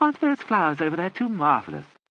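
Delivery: very high, lilting, swooping voice. Frid tries to break a gloomy silence with her father present, speaking in a high voice. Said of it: "began to speak in a high voice".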